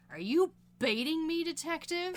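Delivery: mock scornful tone. Quoting a film moment where Linda calls out the detective: imitating Linda's disdain. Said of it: "with disdain in her voice".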